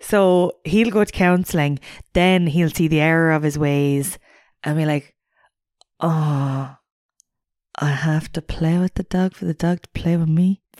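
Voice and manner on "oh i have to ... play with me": slow dawning realisation, long drawn-out "oh". Imitating a man who learns he must play with the dog: impression of him. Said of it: "Very good impression of him".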